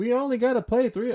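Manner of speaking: ranting voice, very high-pitched. Quoting a famous rant about playing only three games: Charles voice. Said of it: "it's fun to impersonate somebody, um, like Charles".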